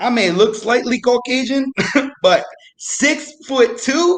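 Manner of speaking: high, drawn-out incredulous disbelief. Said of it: "And I go".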